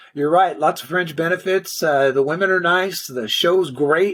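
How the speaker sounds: ordinary talk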